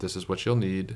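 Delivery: ordinary talk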